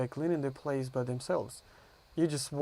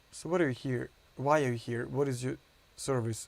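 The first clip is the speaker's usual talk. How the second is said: ordinary delivery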